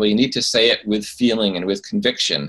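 ordinary talk, nothing marked

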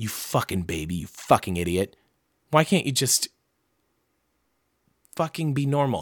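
harsh, cruel berating tone. Telling listeners about their habits, the speaker turns on themselves, mean to oneself. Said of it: "you can hear how mean I'm being to myself".

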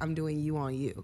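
normal talking voice

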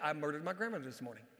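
soft, mumbled, half-swallowed murmur. Retelling how a president tested a receiving line: Franklin D. Roosevelt murmuring. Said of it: "just kinda mummer a little bit".

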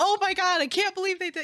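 voice shooting up high, loud and worked up. Describing how they sound when passionate about something, voice going up, loud. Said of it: "my voice just goes up and I'm just like".

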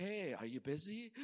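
slow, politely pointed, passive-aggressive tone. Retelling a polite nudge to a busy helper: imitating passive-aggressive tone.

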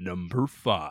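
deep, epic, grand movie-trailer announcer voice. Co-host announces the next entry on the list, deep epic voice. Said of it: "I'll do my deep epic voice".

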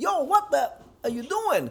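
shrill, very high shout. Retelling yelling at a coworker on a job: retelling a yell. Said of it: "and I yell out".

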